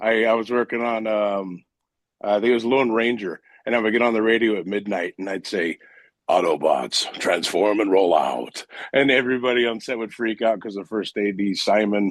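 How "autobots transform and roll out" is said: deep, low-pitched heroic robot voice. Recalling getting on the set radio at midnight, in an Optimus Prime voice. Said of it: "I always do a little Optimus Prime".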